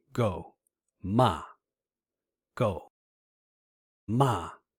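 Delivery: sharp falling pitch on go and ma. Teaching tones, showing the fourth tone with an english word: falling tone. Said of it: "This is the falling tone".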